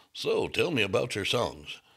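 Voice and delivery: mock, put-on radio announcer voice. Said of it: "I could do my radio voice".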